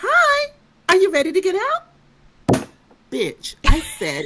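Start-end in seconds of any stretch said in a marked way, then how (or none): 0.0-1.8 very high, bright and chipper voice. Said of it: "your chipperness is driving me crazy".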